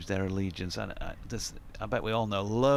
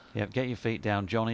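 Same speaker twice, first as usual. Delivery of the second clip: usual speaking voice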